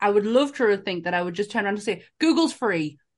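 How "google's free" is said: acted snappy tone with attitude, higher pitch. Acting out what they would say to rude customers: imagined retort with attitude. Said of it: "I would have gotten such an attitude".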